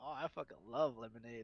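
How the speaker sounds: ordinary talk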